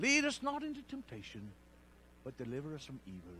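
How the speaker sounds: attempted put-on Irish accent, brogue. Trying to get an accent going for a bit, attempted Irish accent. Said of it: "I'm trying to get my Irish accent going".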